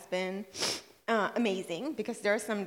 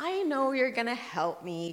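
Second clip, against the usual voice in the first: put-on sarcastic tone, swooping sing-song; 4 semitones higher than usual. Retelling what he said when she lectured him: imitating a sarcastic reply. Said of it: "kind of sarcastically".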